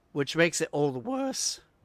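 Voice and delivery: voice cracking. Player commenting to teammates during a game: voice crack. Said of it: "voice crack again".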